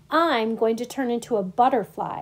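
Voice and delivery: ordinary delivery, nothing marked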